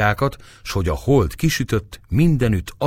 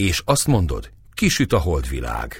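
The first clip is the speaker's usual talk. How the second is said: ordinary delivery, nothing marked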